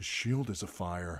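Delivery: stage hush, still voiced. Narrator reads a character's words during a fight in a cave, hushed voice. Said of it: "Gendry said in a hushed voice".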